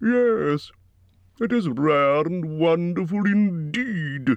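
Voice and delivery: very, absurdly pleased with himself, drawn out. The dragon Smaug answers Bilbo's flattery, absurdly pleased. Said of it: "absurdly pleased".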